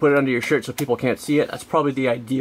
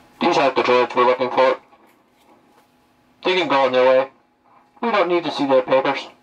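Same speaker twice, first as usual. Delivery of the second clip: voice like a radio transmission. Demonstrating the voice font used for helmets, in an Imperial Trooper walkie-talkie voice. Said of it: "this is more like a walkie-talkie sound".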